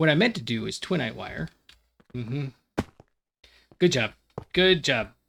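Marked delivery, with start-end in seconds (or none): 3.8-5.1 loud, sarcastic, insincere tone. Praising own poor wiring, sarcastic. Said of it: "That's, uh, sarcasm right there".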